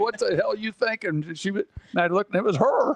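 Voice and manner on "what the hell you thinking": mock heckling yell. Retelling how a spouse in the stands yelled at the coach: imitating someone yelling at a coach. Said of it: "sitting there yelling at the coach, going".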